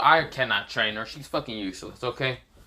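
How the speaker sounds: plain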